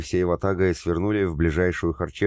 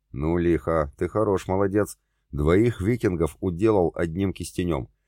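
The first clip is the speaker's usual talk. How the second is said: plain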